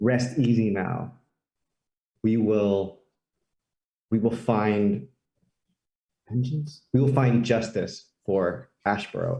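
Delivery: slightly choked up, voice catching a little. A small character puts his hand on a lady to comfort her, getting a little choked up. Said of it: "he gets choked up a little bit".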